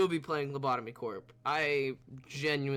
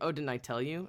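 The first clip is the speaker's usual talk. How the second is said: usual speaking voice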